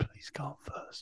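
soft, slow pleading whisper. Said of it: "takes me aside and goes".

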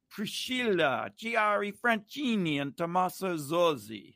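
names pronounced with a put-on Italian accent. Announcing the cast of Drag Race Italia on the show, in a put-on Italian accent. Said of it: "How's that Italian accent?".

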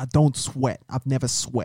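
best-effort put-on Boston accent. Asked to do their best Boston accent, speaking in a Boston accent. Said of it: "Do your best Boston accent".

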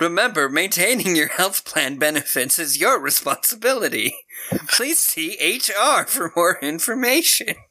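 robotic automated computer voice over speakers. Recapping a movie scene, quoting the compound's computer voice. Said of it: "the computer voice randomly goes".

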